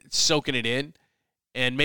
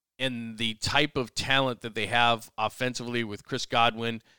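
ordinary delivery

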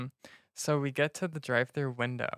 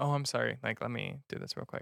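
mock sugary, extra-polite, sing-song, overly nice voice; 4 dB quieter than usual. Retelling talking to a service worker: imitating own overly nice voice. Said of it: "I'm so nice to service workers".

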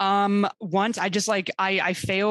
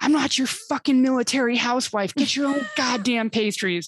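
mock exasperated outburst, mild, half yelled; 4 semitones higher than usual. Retelling losing her temper at work after a bad month, re-enacting a raised-voice yell. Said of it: "I just raise my voice and I'm all like".

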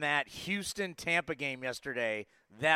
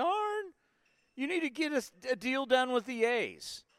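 mock tearful, very high crying, pleading voice; 9 semitones higher than usual. Retelling a player's tearful press conference plea to his agent: imitating Jason Giambi crying. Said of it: "and he's crying".

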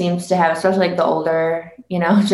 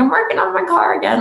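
put-on country accent, pitched very high; 11 semitones higher than usual. Imitating people in Michigan talking about their cars, in a country accent. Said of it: "I don't know why I used a country accent there".

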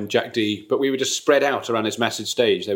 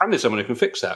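quick, light, cheery and breezy offhand tone. Retelling what a repairman quickly said: imitating a bright, breezy tone. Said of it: "in quite a bright, breezy way".

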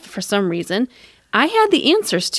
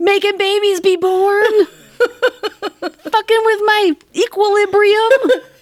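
very high-pitched, screaming, ranting voice; 9 semitones higher, 3 dB louder than usual. Guessing what she was screaming back then, imitating someone screaming. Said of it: "I bet that's what she was screaming".

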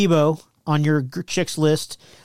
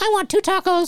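high, squeaky voice with Mexican accent. Pretending to order at a drive-thru: Mexi Elmo voice. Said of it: "in Mexi Elmo style".

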